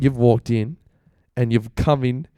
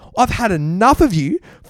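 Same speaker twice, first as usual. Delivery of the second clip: very high, full-on furious yelling blowup; 9 semitones higher than usual. Retelling a friend blowing up from below: imitating someone yelling angrily. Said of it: "Full, like, blowing up".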